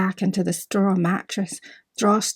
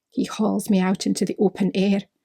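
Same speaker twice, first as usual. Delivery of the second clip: plain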